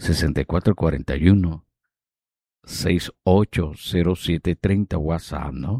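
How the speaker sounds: low, very slow, dictation-style delivery.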